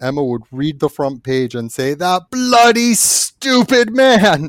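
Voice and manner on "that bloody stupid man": very slow, very high, seething furious rant, put-on. Imagining a character reading the front page: furious Emma Frost voice. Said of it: "and be furious".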